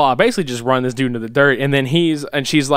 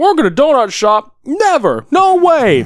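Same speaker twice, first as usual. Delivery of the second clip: mock very high, loud, talking through mouthful; 12 semitones higher, 5 dB louder than usual. Retelling a man's reply to being offered work at the donut shop, imitating talking with mouth full. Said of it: "he's eating a mouthful of donuts".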